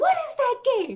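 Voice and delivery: high, loud, shocked voice.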